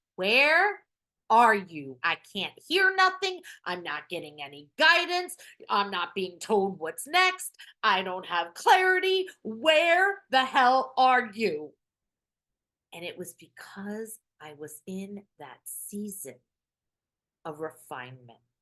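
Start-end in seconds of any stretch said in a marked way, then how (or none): 0.2-11.3 desperate, full-throated screaming, high and loud. Retelling screaming at guides and the universe for answers: imitating own past screaming. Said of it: "I've been there screaming at my guides".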